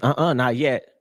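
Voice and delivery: put-on sassy brush-off. Retelling a woman refusing to hand over the hookah: imitating a woman's spunky retort. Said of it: "With a little s-, spunk in her voice".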